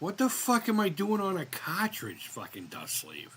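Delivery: bewildered, baffled, confused dad voice. Imagining the dad's reaction to seeing himself on a sleeve: imitating someone confused. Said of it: "my dad looking all confused".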